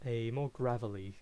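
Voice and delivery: ordinary talk, nothing marked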